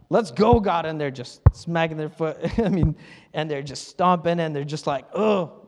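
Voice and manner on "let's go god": mock pushy, forceful, aggressive tone. Imitating people who get aggressive when they pray, mock-aggressive. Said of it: "they become a little aggressive".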